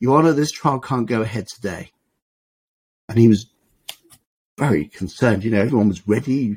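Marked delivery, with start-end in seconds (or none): 0.0-1.9 put-on very bold delivery. Retelling an advocate addressing the judge: imitating a very bold delivery. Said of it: "said in a very, very bold way".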